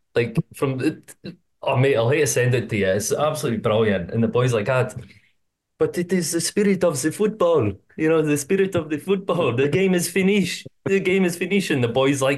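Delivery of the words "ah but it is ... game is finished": French man voice, pitched up. Retelling a french fan being escorted out of the ground: french guy impression. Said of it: "That was a good impersonation there".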